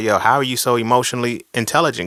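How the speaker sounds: ordinary talk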